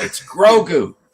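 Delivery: put-on shrill, loud, high, scornful little kid voice. Speaker retelling how a three-year-old corrected her grandma, imitating a scornful child. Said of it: "looks up at her with scorn and says".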